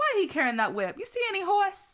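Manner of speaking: put-on high-pitched voice in Southern accent. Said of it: "that was from The Color Purple".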